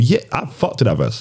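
ordinary delivery

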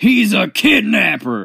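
sudden, abrupt, very loud, rough yell. Recalling a favorite line from the show, retelling Daniel's sudden yell. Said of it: "out of the blue, yells".

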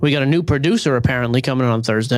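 ordinary delivery

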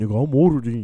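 loud, belted, mocking tone. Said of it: "you be like".

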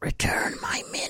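breathy, hushed whisper. Retelling a video scene where a voice manifests, in a whispery voice. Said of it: "there's a whispery voice that sort of manifests and says".

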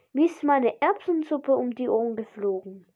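ordinary delivery

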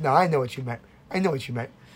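ordinary delivery

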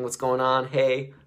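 easygoing, slow, playful, laughing, joking tone. Retelling how they greeted a little cousin: imitating own patient, joking tone. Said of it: "that tone".

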